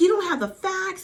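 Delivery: acted very high, shrill, challenging yell. Retelling an argument between two women: imitating someone yelling. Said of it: "Erica's yelling at her".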